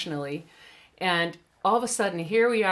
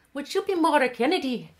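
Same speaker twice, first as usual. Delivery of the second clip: put-on Irish accent with raised pitch; 8 semitones higher than usual. Retelling what a flight attendant asked: imitating an irish accent. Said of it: "laughing at my accent".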